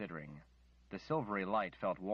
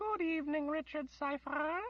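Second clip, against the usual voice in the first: tiny, very high, wispy little voice. A narrator reads a hovering wisp greeting Richard Cypher: tiny little voice. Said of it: "it said in a tiny little voice".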